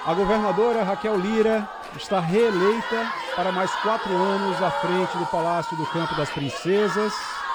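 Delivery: excited, jubilant voice.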